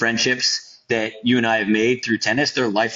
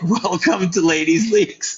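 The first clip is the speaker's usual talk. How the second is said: high, slow voice cracking up with laughter; 9 semitones higher, 3 dB louder than usual. Retelling the director's reply: imitating someone laughing hysterically. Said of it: "He was hysterical laughing".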